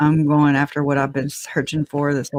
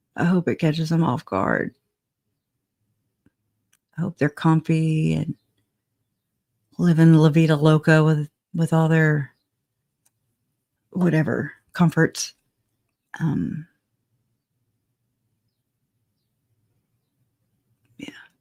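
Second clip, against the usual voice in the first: talking really quietly, very soft. Commenting while a jury trial continues nearby: talking really quietly. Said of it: "I'm talking really quiet".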